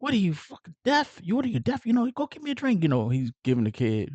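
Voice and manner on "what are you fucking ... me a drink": mock, very high-pitched angry rant. Retelling a scene where Tommy goes off on the kid: imitating Tommy going off on the kid. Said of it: "going off on the kid".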